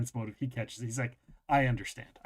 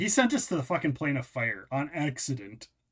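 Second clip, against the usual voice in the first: ordinary delivery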